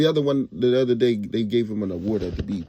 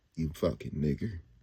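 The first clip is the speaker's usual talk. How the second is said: disdainful, contemptuous, much lower and quieter; 6 semitones lower, 11 dB quieter than usual. Explaining how the word should be said, the speaker demonstrates it with heavy disdain. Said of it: "you gotta say it with real good disdain on it".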